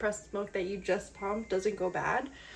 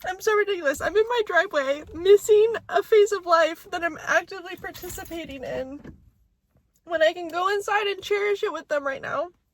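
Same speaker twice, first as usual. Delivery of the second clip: very loud, high, weepy speech through tears; 9 semitones higher, 9 dB louder than usual. Sitting in the driveway, talking while crying. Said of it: "now I'm embarrassed because I'm crying".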